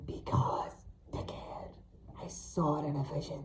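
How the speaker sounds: ghostly, eerie, hushed, phantom-like whisper. Narrating a story, the banshee answers the narrator's question: phantom-like tone. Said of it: "The [name], uh, the banshee you would see. The [name] was the banshee uh, / both yellow and resembling fangs. Her skin was pale and wrinkled. Her clothes looked like rags that a mechanic cleaned his h".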